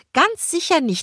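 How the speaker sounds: mocking, very high-pitched falsetto. The narrator repeats a woman's desperate denial, then bursts out laughing: mocking falsetto repeat. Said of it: "im Falsett wiederholen musste".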